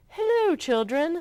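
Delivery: sugary sweet, very high-pitched voice. Miss Nelson comes back and greets the children, in a sweet voice. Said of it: "someone said in a sweet voice".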